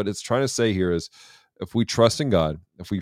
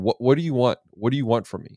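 put-on mild, contained, demanding half-shout; 4 semitones higher than usual. Retelling a movie character yelling at a machine: imitating someone yelling. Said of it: "he's yelling at the machine going".

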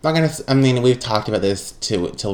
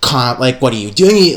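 genuinely angry, parent-like scolding tone. Retelling being caught cleaning at midnight: imitating angry mother. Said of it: "legitimately angry".

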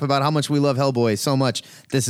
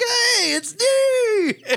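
very high, laughing, giddy happy voice. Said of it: "You sound so th-, happy today. You're like".

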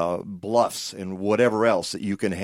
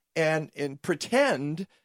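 high, slow, drawn-out indignant outrage. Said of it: "You can hear how mad I was 'cause I can hear it in your voice".

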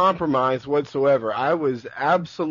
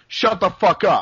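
mock yelling, high, well above talking voice; 5 semitones higher, 5 dB louder than usual. Retelling a man at the cinema turning around and yelling: retelling a yell. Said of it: "He yelled".

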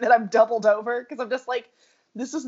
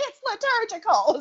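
put-on screamed delivery, high; 9 semitones higher than usual. Retelling a woman arguing the Bible with her ex-boyfriend; retelling a woman's screaming. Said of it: "is what she was screaming at us".

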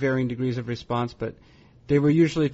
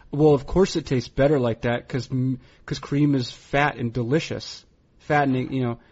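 normal talking voice

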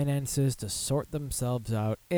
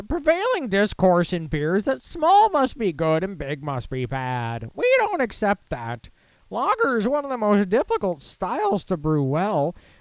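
loud, high, whiny voice with swooping delivery; 8 semitones higher, 6 dB louder than usual. Reading out a Budweiser marketing vice president's email statement, give him a whiny voice for Brian Perkins. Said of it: "I'll give him a whiny voice".

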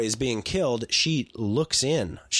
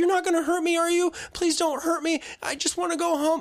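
put-on very high, pleading, begging little kid voice. Retelling a film scene where a kid is tortured: imitating a kid begging. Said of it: "he starts out begging".

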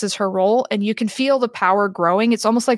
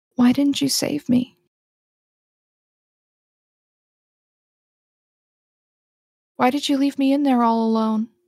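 hushed whisper; 3 semitones higher than usual. The narrator voices someone in the other realm whispering in DeForest's ear, a whisper in the ear. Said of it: "there is a whisper in your ear".

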